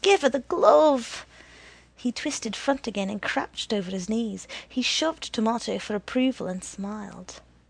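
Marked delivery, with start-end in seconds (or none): 0.0-1.3 loud, high shout, hollering. Twisting backwards, Tito calls up to Green Eyes about the glove, shouted. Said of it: "Tito shouted up to Green Eyes".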